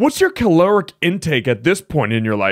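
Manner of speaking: loud, high voice. Mocking a partner's question about diet by imitating the other speaker. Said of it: "Here's you".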